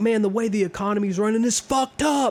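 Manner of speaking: complaining outburst, kept light, ranting. Acting out a neighbor complaining about the economy: imitating someone yelling. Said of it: "Why are you yelling at me?".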